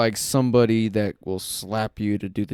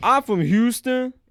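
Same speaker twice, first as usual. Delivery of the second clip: very high with slight street-style delivery; 14 semitones higher than usual.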